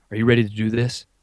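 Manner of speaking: put-on whisper. Retelling what one kid said to another: imitating someone whispering. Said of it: "one guy whispers to the other guy and goes".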